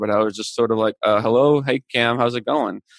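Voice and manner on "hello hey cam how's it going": mock-scared voice, slower. Retelling answering a call from a well-known NHL player, imitating sounding scared. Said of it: "I'm sure I sounded scared".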